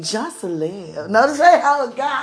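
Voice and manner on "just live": attempted sexy voice, lower and quieter. Speaker talking to listeners over a beat, trying to sound sexy. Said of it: "Let me try to sound sexy with the beat".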